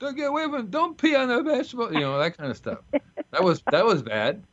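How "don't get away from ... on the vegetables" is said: high-pitched, put-on mock scolding. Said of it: "And all I would tell them is".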